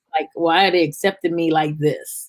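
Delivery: ordinary delivery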